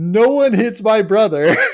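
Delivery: high, loud, full screaming outburst. Retelling a fight at a concert, imitating someone screaming. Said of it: "starts screaming".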